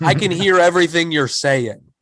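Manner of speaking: plain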